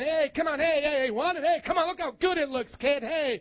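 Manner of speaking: tempting, coaxing street hustler voice. Imitating the devil tempting someone, sounding like a little con man. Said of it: "He sounds like that little con".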